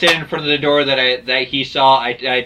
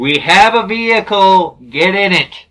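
urgent, high, loud yell; 6 semitones higher, 5 dB louder than usual. A player voicing their character stepping out of the truck, yelling in. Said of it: "I'm stepping outside of the truck and I'm yelling in".

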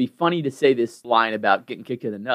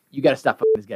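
ordinary talk

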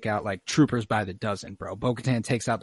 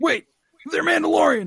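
very high, loud, frantic, panicked cry, acted out; 6 dB louder than usual. Retelling a scene where a voice cries out over the comms: retelling a panicked shout. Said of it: "we hear a panicked voice".

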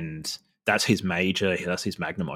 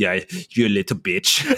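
terrible, fake, put-on Austrian accent; 5 dB louder than usual. Voicing the imagined woman in the scene, terrible Austrian accent. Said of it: "for some reason she's got an Austrian accent".

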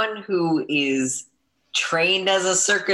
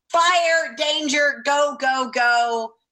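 shrill, very high yelled cry; 10 semitones higher than usual. Answering the group in character as Scissors: Scissors yelling a warning. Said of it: "What does Scissors yell, scream at them?".

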